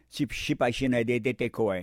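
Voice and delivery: normal talking voice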